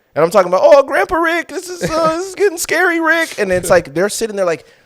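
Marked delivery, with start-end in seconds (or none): 0.7-3.4 very high, halting cartoon voice, stumbling through. Acting out a line while being led away: Morty voice. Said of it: "He's quoting Rick and Morty".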